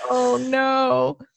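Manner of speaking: crying, tearful, high, drawn-out "no". Reacting to another speaker's game interpretation, crying while talking. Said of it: "I am full on crying right now".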